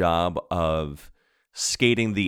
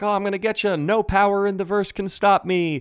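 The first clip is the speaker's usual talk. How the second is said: very high, playful teasing tone; 12 semitones higher than usual. Retelling a character's line shouted during a childlike game: imitating Kaylee's playful taunt. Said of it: "Like, a very playful way".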